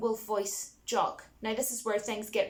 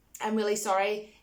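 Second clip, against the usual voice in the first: ordinary talk, nothing marked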